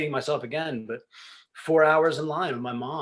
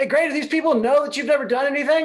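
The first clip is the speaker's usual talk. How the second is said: brash, loud, obnoxious voice pitched very high; 12 semitones higher, 6 dB louder than usual. Retelling what a father said at the intermission: imitating a loud, obnoxious dad. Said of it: "my dad was really loud and, and kind of, could be obnoxious".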